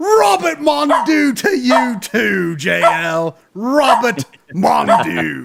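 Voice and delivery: put-on Australian accent. Answering a donor's request, say the name in an Australian accent. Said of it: "Please say Robert Mondu in your best Australian accent".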